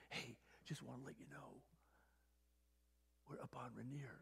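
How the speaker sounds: quiet, breathy, barely voiced whisper. Retelling a phone call from two friends on Mount Rainier, retelling a whisper. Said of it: "they're whispering".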